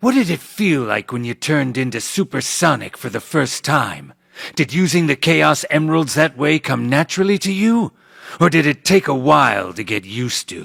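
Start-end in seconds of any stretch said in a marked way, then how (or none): none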